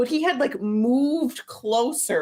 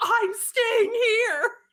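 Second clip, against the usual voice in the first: very high-pitched, stubborn, aggressive shout; 11 semitones higher than usual. Retelling a woman refusing to move during a group picture; retelling aggressive yelling. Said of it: "It was all very aggressive yelling".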